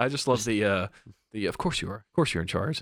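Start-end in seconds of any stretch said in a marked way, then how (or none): 1.5-2.8 whispering. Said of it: "He kinda whispers it to him".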